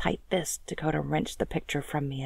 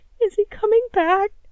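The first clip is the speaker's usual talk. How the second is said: shrill, very high, very loud whining plea; 12 dB louder than usual. In a story, the narrator asks about someone who left, whining. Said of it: "I whined".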